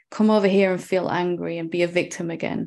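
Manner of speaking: ordinary talk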